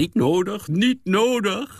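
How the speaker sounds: triumphant tone. The narrator answers Miseline's hesitant offer to make an appointment, triumphant tone. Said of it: "antwoordde ik op triomfantelijke toon".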